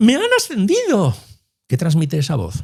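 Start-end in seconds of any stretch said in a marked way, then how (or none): 0.0-1.2 put-on very high, bright, joyful girl's voice. Show listeners what a voice conveys by playing a girl who has been promoted, imitating a happy girl's voice. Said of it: "voy a tratar de imitar la voz de".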